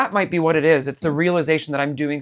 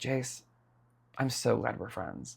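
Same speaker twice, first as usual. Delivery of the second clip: very quiet, soft, hushed whisper; 4 semitones lower, 13 dB quieter than usual. Retelling how he hugged and whispered in your ear: imitating a whisper. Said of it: "whispers in my ear".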